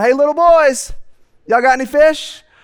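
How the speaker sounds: high, hollered call, acted out. Speaker acts out a man hollering at fishermen on a boat, retelling someone hollering. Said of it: "Who is this guy like hollering at me?".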